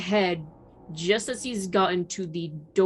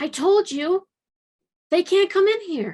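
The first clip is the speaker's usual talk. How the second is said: put-on very high, loud small child's voice; 12 semitones higher, 6 dB louder than usual. Voicing a child in the shack answering again: little kid voice. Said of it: "that little kid voice just coming up again".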